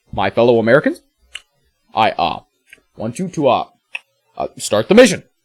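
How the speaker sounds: put-on halting voice with long pauses between words. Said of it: "that was my impression of Obama".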